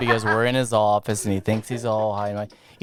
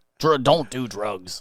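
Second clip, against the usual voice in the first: slow, put-on grumpy dad voice. Retelling being the backup: imitating own grumpy dad voice. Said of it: "a grumpy dad".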